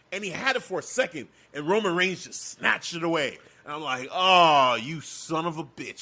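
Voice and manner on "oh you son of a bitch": acted, fuming, loud, each word dragged out. Retelling own reaction when it got snatched away: imitating own angry reaction. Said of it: "I was so mad".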